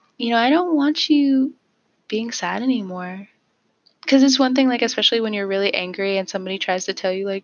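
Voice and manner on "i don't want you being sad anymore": put-on tiny, slow, childlike baby voice. Describing a voice that came to them while angry, in a little baby voice. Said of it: "there's like this little baby voice".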